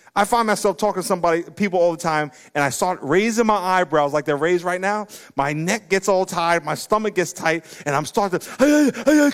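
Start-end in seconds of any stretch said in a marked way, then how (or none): 8.5-9.3 high, loud, very excited. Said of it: "I get so excited".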